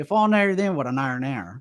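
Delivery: over-the-top country accent. Repeating the phrase once more for the others, in an exaggerated country accent. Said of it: "you're literally putting on the most country".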